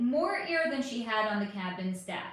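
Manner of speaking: ordinary delivery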